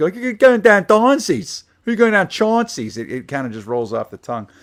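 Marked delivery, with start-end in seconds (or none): 0.1-3.0 clumsy put-on Pittsburgh Yinzer accent, loud and high. Show what anybody doing this accent always says, in a bad Yinzer accent. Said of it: "Whenever anybody does like a bad Yinzer accent".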